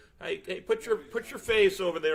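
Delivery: loud, high-pitched call projected across a distance.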